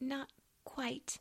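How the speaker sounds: soft, high, halting stammer. A girl answers an angry man demanding more: stammering. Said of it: "stammered Amy".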